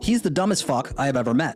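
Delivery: ordinary talk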